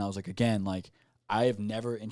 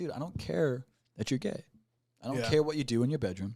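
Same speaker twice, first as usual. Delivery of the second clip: put-on angry, pissed-off voice; 3 semitones higher, 4 dB quieter than usual. Retelling what he tells someone who approaches him: retelling own angry words. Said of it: "it pisses me off".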